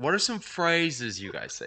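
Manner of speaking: put-on friendly, sing-song English accent. Retelling a question David asked the group, imitating David's English accent. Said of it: "in his English accent".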